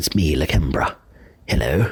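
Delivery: light, put-on British accent with voice dropped low. Recording a voicemail greeting again, speaker decides to sound a bit British. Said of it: "I'll sound a bit British then".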